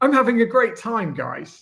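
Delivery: upbeat, lively, full of energy. Announcing a tone, then saying a line to the guys in it: energetic tone. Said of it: "Energetic tone".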